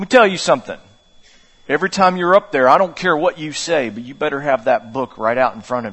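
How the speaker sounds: low, deliberately put-on West Virginia accent. Retelling a man's advice after hearing the speaker will become a preacher, put-on West Virginia accent. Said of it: "I'm going to add the accent here".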